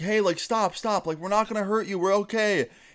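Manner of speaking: mock shouting. Retelling yelling back at a man chasing them: retelling yelling back. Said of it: "we're trying to yell back".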